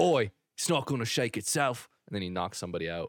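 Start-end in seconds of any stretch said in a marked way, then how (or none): 0.0-1.9 tough-guy, action-movie hero delivery. Acting out a movie line: Jason Statham voice. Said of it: "A good impression".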